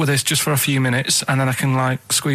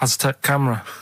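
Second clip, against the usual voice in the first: imitated German accent, mock German pronunciation. Acting out how a German man would say it, imitating a German accent. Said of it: "the way he'd say it, he'd be like".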